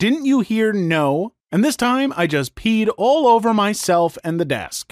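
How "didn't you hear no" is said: mock irritated, angry teacher voice. Retelling the teacher refusing a second restroom request: imitating the teacher saying it angrily. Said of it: "this time she angrily says".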